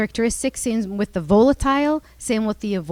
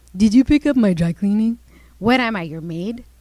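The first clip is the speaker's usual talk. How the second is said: sarcastic, taunting, mocking tone; 3 dB louder than usual. Illustrating a marital spat, the wife mockingly repeats her husband's question. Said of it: "She says mockingly".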